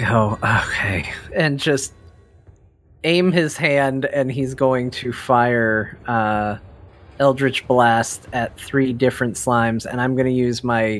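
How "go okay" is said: resigned sigh, lower pitch. Voicing a character about to fire Eldritch Blast at slimes, resigned sigh. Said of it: "with a resigned sigh".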